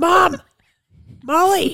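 high, loud calling out.

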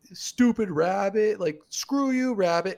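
play-acted, very high, shrill childish jeering shout. Retelling how a group of kids yelled at a rabbit: imitating kids yelling. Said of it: "all of us yelling at the rabbit".

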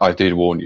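mock flat, deadpan delivery. Telling a story about a loud fart, quoting someone's reply, retelling a deadpan line. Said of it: "it's just deadpan".

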